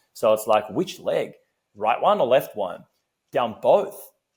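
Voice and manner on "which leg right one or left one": normal talking voice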